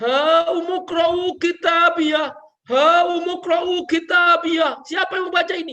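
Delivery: high, loud, slow, proud jubilant cry.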